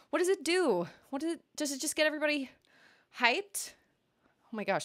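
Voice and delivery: out of breath. Reacting to a first-ever hype train, out of breath. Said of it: "I'm like winded".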